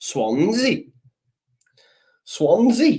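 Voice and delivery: attempted Welsh accent. Trying out a Welsh accent for the chat: attempted Welsh accent. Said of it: "Nah, I can't. Welsh is hard".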